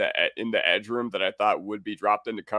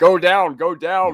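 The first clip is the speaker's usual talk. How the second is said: imitated yell, higher and louder; 8 semitones higher, 6 dB louder than usual. Retelling watching an interception return, imitating own yelling. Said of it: "And I was yelling".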